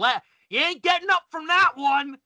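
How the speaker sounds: screamed wrestler voice, pitched high. Retelling how the wrestler gets up after his move: imitating a wrestler screaming. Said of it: "he gets up and he screams".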